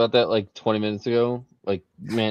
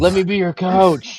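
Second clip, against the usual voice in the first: high, loud yelling. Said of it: "I'd be screaming from the crowd".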